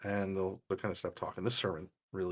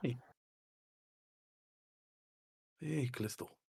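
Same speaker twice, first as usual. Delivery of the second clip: put-on Scottish accent; 4 semitones higher, 5 dB quieter than usual. Voicing the uncle greeting callisto: scottish accent. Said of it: "I believe you made him Scottish?".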